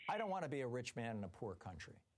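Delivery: ordinary delivery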